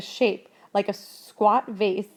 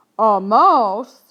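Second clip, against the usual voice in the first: sonorous, incredulous voice, much louder; 9 dB louder than usual. Narrating a voice answering the crow's claim about his friend, sonorous, unbelieving. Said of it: "The sonorous voice sounded unbelieving".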